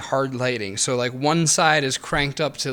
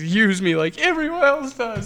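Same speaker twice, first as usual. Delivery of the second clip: mock weepy, sobbing, high, drawn-out crying voice; 8 semitones higher than usual. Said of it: "starts crying harder again".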